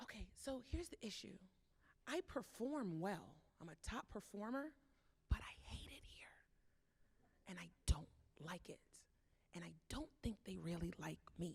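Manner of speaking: hushed, confiding, intimate whisper. Retelling a top performer confiding they hate their job, imitating someone whispering. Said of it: "They're whispering 'cause of that poem".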